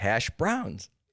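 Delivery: hash browns said with stress leaned on browns. Showing how one says hash browns when asked: stress on BROWNS. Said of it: "emphasizing browns".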